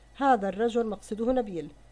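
plain

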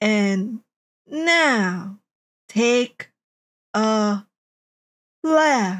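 very slow, broken-up navigation voice, mid-phrase pauses, stretched words. Mocking the voice that gives shitty directions, imitating a very slow directions voice. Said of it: "speaks as if it's ... unable to reproduce more than two words per minute".

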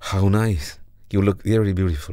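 plain

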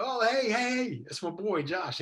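re-enacted shout. Retelling spotting their son Josh from a distance, retelling a yell. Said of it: "And I'm yelling".

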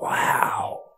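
hushed whisper. Narrating a story, Sam watches the angel soar over the mice: whispered. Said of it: "whispered Sam".

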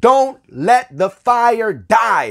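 loud, slow, fervent, fiery preaching voice.

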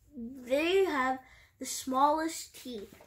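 plain

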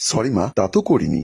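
ordinary talk

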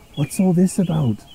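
quiet, hushed, soft half-whisper. Rebecca asks Edward about the engines' quarrel, half-whispering. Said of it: "whispered Rebecca to Edward".

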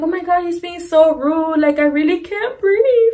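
put-on high, weepy, teary drunken sobbing through words. Retelling crying in the car while drunk: imitating own drunk crying. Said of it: "and I start crying".

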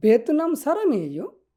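rising questioning intonation. Turning a phrase without a question mark into a question: questioning intonation. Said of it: "just টোনটাকে change করে দেন।".

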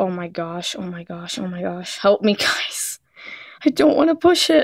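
nervous, anxious and frightened. Hesitating before pressing a button on a tablet: nervous and scared. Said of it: "I'm so scared".

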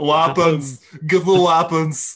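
put-on heavy Austrian accent. Describing someone who is going to be Arnold Schwarzenegger: Arnold Schwarzenegger impression. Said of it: "he's gonna be Arnold Schwarzenegger".

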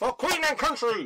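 high-pitched, rousing, charging battle cry. Jumping off a roof to charge with a spear: shouting a battle cry. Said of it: "I shall shout".

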